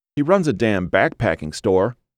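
ordinary delivery

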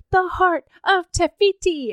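put-on high, slow little toddler voice. Speaker retells a toddler going up to people, imitating Ember's toddler voice. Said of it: "in his like toddler voice".

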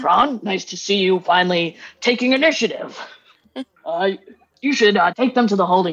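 put-on orc character voice. In a tabletop game, voicing a higher-ranking orc greeting kron, higher-ranking orc voice. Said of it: "a higher ranking orc says".

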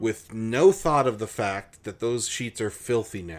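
ordinary delivery

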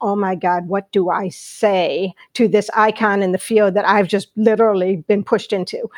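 ordinary talk

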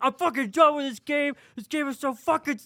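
very high, furious, livid screaming. Retelling a friend's rage over a board game: imitating someone livid and screaming. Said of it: "livid, screaming".

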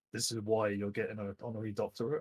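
ordinary talk

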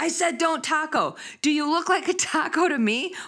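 mock very high, worked-up, excited yelling. Retelling how an excited slide worker started shouting: retelling a shout. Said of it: "he started shouting".

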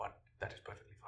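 soft, unvoiced whisper.

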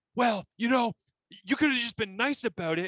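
very high, angry, defensive retort. Retelling a man's comeback after being yelled at: imitating someone angry, defensive. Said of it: "And then he got all angry".

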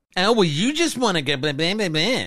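put-on condescending voice, very high-pitched. Asked how he fake-complains, mocking his wife in a put-on condescending voice. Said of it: "put on that fucking condescending voice".

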